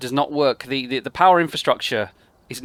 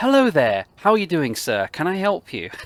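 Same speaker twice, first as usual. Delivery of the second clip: put-on polite customer-service phone voice; 4 semitones higher than usual. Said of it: "I sound like I'm taking a call".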